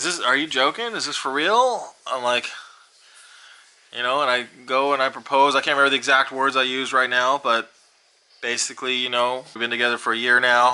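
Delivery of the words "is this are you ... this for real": mock giggly, half-laughing, incredulous, stunned disbelief. Retelling the proposal, the speaker acts out the partner's reaction, imitating half-laughing disbelief. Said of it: "kind of laughing".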